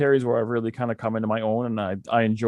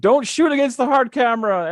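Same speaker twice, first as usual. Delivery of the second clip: mock yelling, pitched much higher; 13 semitones higher, 4 dB louder than usual. Describing watching badly done indie wrestling, retelling a yell at the TV. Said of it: "I'm yelling at the TV".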